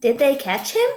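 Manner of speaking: question-like rising tune at the end on "him". Teaching punctuation, asking the question with the voice rising at the end. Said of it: "Voice is going up at the end".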